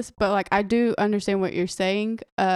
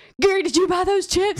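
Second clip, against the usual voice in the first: put-on shrill angry yell, pitched way up; 9 semitones higher, 4 dB louder than usual. Retelling someone yelling about eaten chips: imitating someone yelling. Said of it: "yelling at him".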